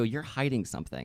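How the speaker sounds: put-on aggressive, accusing tone. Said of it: "when you say it like that, it sounds aggressive".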